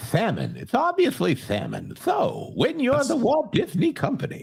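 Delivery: very high, swooping, sing-song cartoon voice, badly done. Asked for one, the speaker answers in a bad King Candy impression. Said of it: "you do a very bad uh, King Candy impression".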